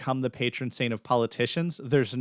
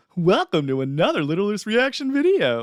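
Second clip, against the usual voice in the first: loud, swooping, animated morning radio announcer voice; 8 semitones higher, 5 dB louder than usual. Redoing the video's opening line: morning radio voice. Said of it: "I should have done, like, morning radio".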